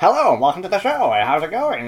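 put-on old-timey 1930s-style voice. Speakers joking about jazz clubs, one slips into their 1930s-style voice. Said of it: "it sounds a bit like our 1930s voice".

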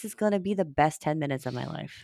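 ordinary talk

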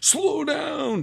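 high-pitched yell.

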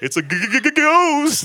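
mock frightened cartoon stammer. Picturing the disciples seeing a ghost: Scooby-Doo style mock scared stutter. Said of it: "Scooby-Doo sort of".

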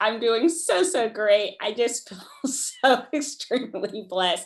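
laughing nervously mid-sentence while talking. Sharing a very good year while others struggle: nervous laughter while talking. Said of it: "I have nervous laughter in saying that".

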